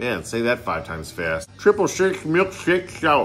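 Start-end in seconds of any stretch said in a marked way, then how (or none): 1.6-3.3 lispy cartoon duck voice, pitched up. Trying to say a beer name five times fast, sounding like Daffy Duck. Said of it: "Now I sound like Daffy Duck".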